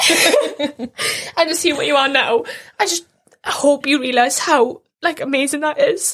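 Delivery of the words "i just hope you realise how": slowed, tearful voice with a crying catch. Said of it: "I'm getting emotional".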